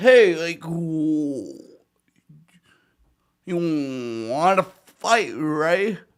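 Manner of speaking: very slow, drawn-out, playful teasing tone. Retelling a reply to a director who punched playfully: retelling own joking challenge. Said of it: "jokingly smiling".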